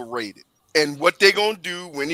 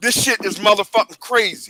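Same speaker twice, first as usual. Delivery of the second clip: high-pitched, fed-up, pissed-off cursing rant; 5 semitones higher than usual. Telling viewers about leaving the Miami Heat game early: pissed off ranting. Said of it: "let me show you how pissed off I am".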